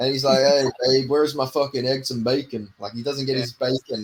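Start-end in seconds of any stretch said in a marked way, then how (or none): 0.4-2.7 put-on obnoxious jerk voice. Speaker imagines a stepdad at the table asking for breakfast, dickish movie-stepdad impression. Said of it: "that dickish stepdad in every American movie".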